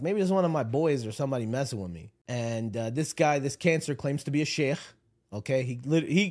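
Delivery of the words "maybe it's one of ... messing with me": plain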